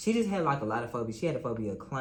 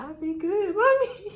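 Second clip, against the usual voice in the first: put-on very high, slow, pleading little-girl voice; 8 dB louder than usual. Imitating a murdered girl's plea heard in one's head: imitating the girl pleading. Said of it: "I can hear her in the back, in my head, like".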